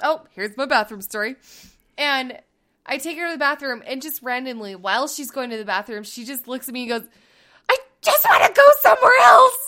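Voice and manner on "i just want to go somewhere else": play-acted tearful wail, very high and loud. Retelling what she said while being taken to the bathroom, imitating her teary outburst. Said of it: "starts getting all teary-eyed again".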